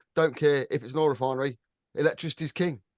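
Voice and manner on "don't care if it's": usual speaking voice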